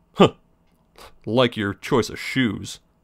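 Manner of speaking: very sarcastic, scoffing tone. Retelling what a man said after turning to look at the speaker: retelling a sarcastic remark. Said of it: "like real sarcastically".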